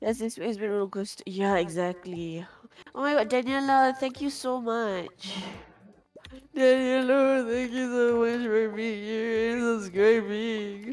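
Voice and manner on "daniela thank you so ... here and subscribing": speaking through tears. Thanking a viewer for subscribing, in a crying voice. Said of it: "Why are you crying?".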